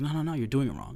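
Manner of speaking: ordinary talk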